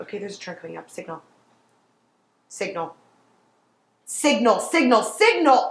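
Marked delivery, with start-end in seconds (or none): 4.0-5.7 loud shouting, yelled over and over. Passenger coaching Gabby through a drive, telling her to signal, yelling. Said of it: "You said you wouldn't yell".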